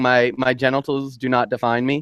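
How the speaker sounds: plain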